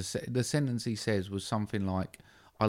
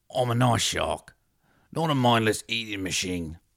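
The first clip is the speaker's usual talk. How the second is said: put-on cartoon shark voice; 2 semitones higher, 7 dB louder than usual. Doing a movie impression where Bruce the Shark meets Mickey: Bruce the Shark impression. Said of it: "Bruce the Shark met Mickey from Snatch".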